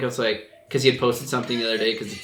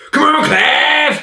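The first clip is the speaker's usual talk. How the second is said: very high, very loud, belted hype yell; 12 dB louder than usual. Imitating a skater hyping up a teammate: Clint Walker impression. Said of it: "That was my Clint Walker impression".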